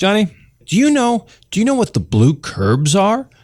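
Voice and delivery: put-on high, rising, quizzical, confused old-man voice.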